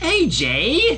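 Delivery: very high, bouncy, rapid, scolding tone. Narrator reading a character's rebuke of the narrator, in a chastising voice. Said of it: "Pinky says in a chastising voice".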